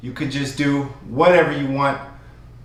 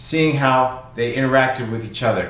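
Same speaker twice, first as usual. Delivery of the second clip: normal talking voice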